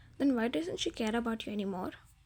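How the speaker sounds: ordinary delivery, nothing marked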